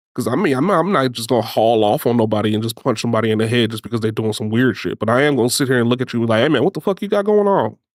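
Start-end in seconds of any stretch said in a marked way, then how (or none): 6.4-7.7 play-acted, forceful, pitched-up confrontational tone with oomph. Showing how he would confront someone: forceful confrontational tone. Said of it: "enough oomph in my voice".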